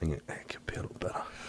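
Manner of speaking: fast, soft, muttered whispered aside.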